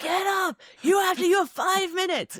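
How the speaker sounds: very high, urgent yelling. Retelling how a racer's wife yelled at him over the phone: retelling a yell. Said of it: "she's like yelling at him on the phone".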